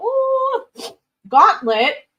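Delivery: sudden, very high, loud squeak as voice breaks. Reading out a job listing from Gauntlet: voice cracking. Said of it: "my voice cracked there".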